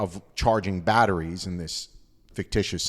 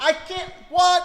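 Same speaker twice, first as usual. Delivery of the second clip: very high-pitched loud yell. Retelling the other speaker yelling back in the wind: imitating someone yelling. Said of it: "we're just yelling at each other".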